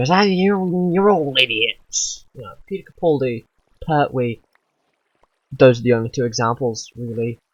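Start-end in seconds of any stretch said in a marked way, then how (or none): 0.1-2.2 put-on grouchy old man yell, higher, louder, slower. Speaker describing a character who yells at people, imitating a grouchy old man yelling. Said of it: "a grouchy old man ... yells at people".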